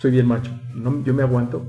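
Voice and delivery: ordinary talk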